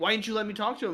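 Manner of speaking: put-on yelling. Retelling a scene where Bella yells at him: imitating Bella yelling. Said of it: "Bella yells at him".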